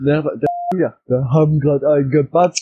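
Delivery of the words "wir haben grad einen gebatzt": words spoken loudly. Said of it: "So richtig laut".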